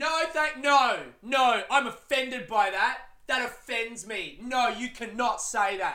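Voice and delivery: acted-out outburst, high, drawn-out yell. Retelling a heckler objecting to another comic's joke: imitating someone yelling. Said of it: "turns to the crowd and to the comic and yells".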